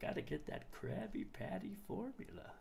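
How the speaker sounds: breathy, whispered cartoon voice. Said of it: "I used to have a great Plankton voice".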